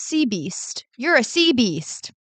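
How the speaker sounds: put-on unhurried called-out jeer, drawled out slowly. Speaker retells what a guy yelled while speeding up to him, retelling a yell. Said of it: "he yells out".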